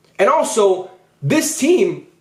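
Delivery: voice breaking and cracking mid-phrase. Talking about a football team's chances, voice cracking. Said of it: "my voice just cracked so much".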